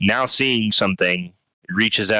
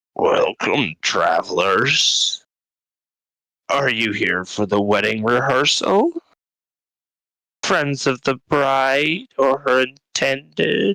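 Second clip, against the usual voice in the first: higher, burbling, gurgled creature voice; 5 semitones higher than usual. Narrator voicing a larval creature greeting travelers, burbly, gurgled creature voice. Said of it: "it speaks to you in a very burbly, gurgled voice".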